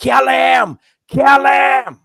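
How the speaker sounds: mock, very high, ragged, drawn-out top-of-lungs screaming. Retelling a prison yard stabbing watched from a cage, imitating Charles Manson screaming. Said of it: "he was screaming at the top of his lungs".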